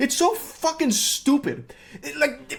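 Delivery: very high, slow, heated, furious stammer. Ranting about the U.S. immigration process, angry stuttering. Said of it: "I'm actually hitting a full blown Porky Pig [name] right now".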